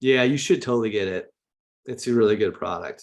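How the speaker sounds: unsure, doubtful, half-hearted, unconvinced delivery. Example of a sales pitch where inner beliefs show: unconvinced unsure tone. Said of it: "you don't sound like you, you believe yourself".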